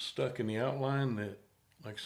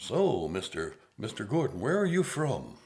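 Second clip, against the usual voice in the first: nice put-on radio announcer voice, loud and swooping; 6 dB louder than usual. Imagining reading out prepared questions to someone, in a nice radio voice. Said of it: "in my nice radio voice".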